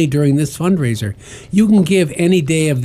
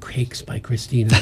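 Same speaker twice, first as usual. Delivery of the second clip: hushed radio-announcer-style whisper; 5 semitones lower, 9 dB quieter than usual. After the hosts praise some cupcakes, one says the bakery name: NPR voice. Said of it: "that was an NPR voice".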